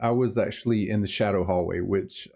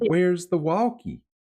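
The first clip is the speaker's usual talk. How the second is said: put-on broad Southern accent, pitched up; 8 semitones higher than usual. Imitating a voice heard on a recording, imitating a southern accent. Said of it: "very, very Southern".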